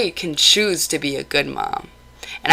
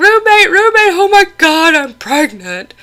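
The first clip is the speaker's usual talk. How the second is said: frantic, very high, loud, shrieking panicked scream; 13 semitones higher, 6 dB louder than usual. Retelling screaming at your roommate after taking a pregnancy test, reenacting your own screaming. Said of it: "I'm screaming at him".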